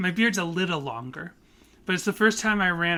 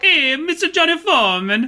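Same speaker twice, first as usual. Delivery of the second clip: zany, very high, loud put-on character voice; 10 semitones higher, 8 dB louder than usual. Speaker introduces his own character to the other speaker, in a wacky character voice. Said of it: "So here's my character".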